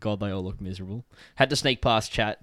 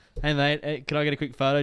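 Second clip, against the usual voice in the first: play-acted timid, hesitant, unsure tone; 5 semitones higher than usual. Retelling asking a player for a photo in a food line: imitating own timid photo request. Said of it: "I was doing the whole, like".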